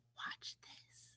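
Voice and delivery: barely audible, hushed, breathy whisper. Retelling how a woman whispered to the speaker before walking toward the door: whispering. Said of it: "And then she whispers".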